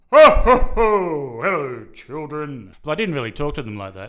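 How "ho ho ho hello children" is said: loud, slow, booming, drawn-out bellow. Asked on the spot, a former shopping-mall Santa gives his best Santa voice. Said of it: "give us your best Santa voice".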